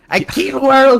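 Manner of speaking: high, loud, belted puppet-like dummy voice. Imitating a movie trailer line in the lead's voice: imitating Bill Skarsgård. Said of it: "that's Bill Skarsgård's voice".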